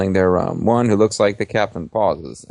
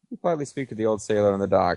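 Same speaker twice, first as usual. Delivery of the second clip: usual speaking voice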